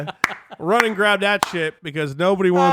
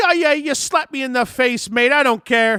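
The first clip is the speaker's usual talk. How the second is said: put-on botched high, slow Irish accent drifting into Australian; 5 semitones higher than usual. Imitating how women from Ireland react, attempted Irish accent. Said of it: "was that Australian?".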